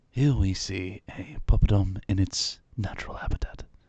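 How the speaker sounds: loud, slow, big nature-documentary narration voice. Reading out a viewer's message as requested: David Attenborough voice. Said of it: "supposed to be read out in a David Attenborough voice".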